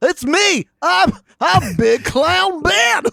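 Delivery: high, squeaky, wacky voice. Podcast host introducing himself in character on a silly Halloween episode, Big Clown Ben clown voice. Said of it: "clown character?".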